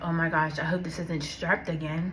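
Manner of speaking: plain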